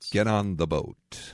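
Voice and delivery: mock cool-sounding voice. Describing an actor's voice, speaker demonstrates it: imitating an actor's cool voice. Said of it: "it sounds like this every time he speaks".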